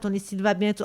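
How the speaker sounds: ordinary talk, nothing marked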